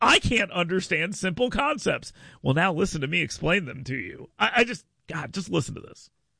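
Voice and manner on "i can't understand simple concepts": mock baffled, dopey, clueless radio voice. Imagining coming on the radio and going: mock confused radio voice. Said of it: "Imagine coming on the radio and going".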